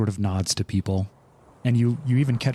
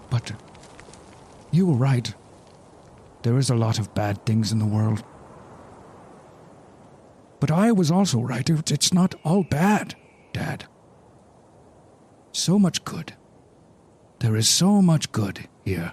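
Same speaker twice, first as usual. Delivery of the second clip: heartfelt, emotional delivery in a higher voice; 3 semitones higher than usual. Speaking in character to a dead father, heartfelt emotional speech. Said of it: "Bro, I'm choked up".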